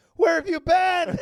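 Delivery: shrill, very loud, high-pitched, full-volume yelling. Joking about how the other speaker answered a telemarketer: mock yelling. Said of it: "I thought you were yelling at him like".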